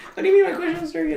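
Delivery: high, fast mocking put-on voice. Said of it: "They're gonna be like".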